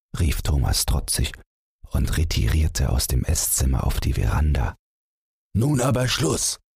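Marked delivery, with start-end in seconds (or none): 5.6-6.6 shrill, very high-pitched, loud shouting. The father ends the argument with his son, shouting. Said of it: "schrie der Vater".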